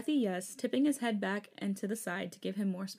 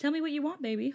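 lighthearted teasing, higher pitch; 6 semitones higher than usual. A man, hands on the pillow beside his partner's head, teasing. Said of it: "Hoseok teased".

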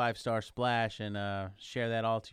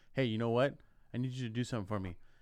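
mock very stern, strict tone. Retelling the security guard's request at the exit: imitating a very stern security guard. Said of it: "Very, very sternly".

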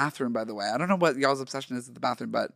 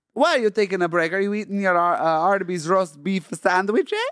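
fake, high-pitched Italian accent; 5 semitones higher, 4 dB louder than usual. Improvising a scene in an auto body shop: put-on Italian accent. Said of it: "Italian is the accent".

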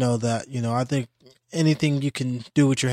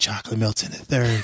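seductive, sultry, sensual bedroom-style voice; 2 semitones lower than usual. Retelling being choked while sparring: imitating a sensual whisper. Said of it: "whispered in my ear all sensual and shit".

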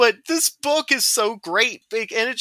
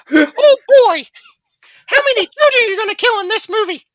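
voice going very high and loud; 11 dB louder than usual. Joking about a Disney movie's dark themes, in a Mickey Mouse voice. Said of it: "I've never heard you do a Mickey impression".

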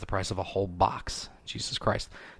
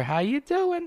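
very high, comic-style voice. Doing a quick impression for podcast listeners: Bill Burr voice. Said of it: "That was a pretty good Bill Burr voice".

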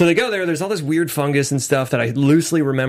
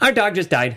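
put-on nonchalant child voice, higher; 4 semitones higher than usual. Retelling what a niece told a checkout worker: imitating a super nonchalant kid. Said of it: "super nonchalant, like".

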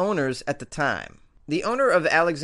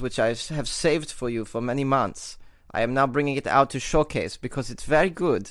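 put-on German accent; 2 semitones lower than usual. News host on Weird AF News shows off his German accent. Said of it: "This is my German accent".

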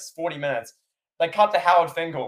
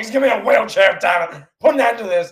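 loud, raised, put-on commentator yell; 4 semitones higher, 5 dB louder than usual. Retelling a match, imitating Jim Ross yelling. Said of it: "Jim Ross is yelling".

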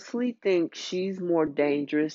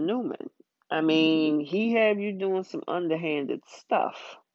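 ordinary talk, nothing marked

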